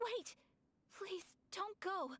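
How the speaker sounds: high, desperate, pleading cry.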